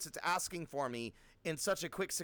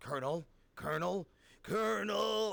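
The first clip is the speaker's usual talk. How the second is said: gravelly, creaky soldier voice; 2 semitones higher than usual. Speaker attempts Metal Gear voices, calling out for the Colonel: Snake voice impression. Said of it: "I can't do the Snake voice beyond just like the".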